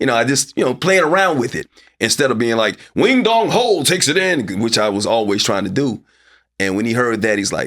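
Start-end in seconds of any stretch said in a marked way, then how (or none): 3.0-4.6 buttoned-up, high-pitched, swooping sportscaster voice. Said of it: "I had to be buttoned up".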